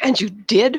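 sudden exclamation full of disbelief. After hearing Anatolia's account about Ballas, her listener responds, exclaiming. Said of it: "her wrath exclaimed".

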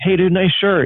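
very high, called-out yell. Retelling spotting a kid wearing their shirt, retelling own yell. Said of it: "I just yelled out".

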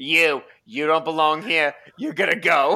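put-on Boston Yiddish accent. Acting out someone at Florida's gate turning people away, in a Boston Yiddish accent. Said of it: "Here comes the Boston Yiddish accent".

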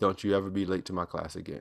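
very stern, scolding voice. Retelling the other speaker's warning about lateness to class: imitating a stern warning. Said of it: "you saying very sternly".

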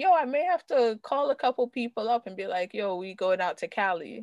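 plain

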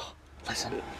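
whispered, hushed voices. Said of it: "They're like".

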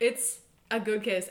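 normal talking voice

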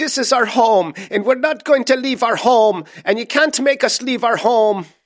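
very high, shrill, bad leprechaun-style Irish accent. Imitating a weird woman who refused to leave her home, in a leprechaun-like irish voice. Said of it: "the soul of a leprechaun jumped into her".

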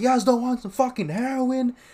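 very high-pitched, yelled-out shout. Retelling how a homeless guy kept offering heroin: imitating someone shouting. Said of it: "he's shouting this".

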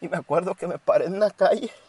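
high, tearful voice, speaking through tears. Retelling a memory of standing in the street, speak while crying. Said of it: "discúlpeme si estoy llorando".

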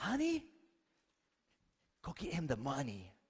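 swooping, hushed stage whisper meant to carry. Retelling what a husband said to his wife, stage whisper. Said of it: "said in a whisper, but it was more of a stage whisper".

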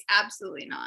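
mock dead-serious tone, low. Retelling refusing a request to the others: retelling a flat straight-faced refusal. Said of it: "I said with a perfectly straight face".

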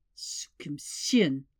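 muttered, under the breath. A narrator reads a man's words at a table, muttered. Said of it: "he muttered".

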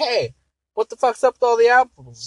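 shrill, very loud, very high little squeaky voice. Telling a bar joke, voicing the short man who walks in, little person voice. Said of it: "the midget voice or whatever".

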